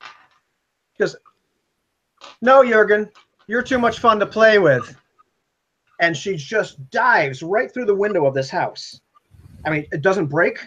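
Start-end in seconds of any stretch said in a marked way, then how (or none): 2.4-5.0 abrupt, sudden loud yelled outburst. Narrating a scene, the speaker voices a woman calling out to Jurgen: sudden shout. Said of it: "all of a sudden she shouts".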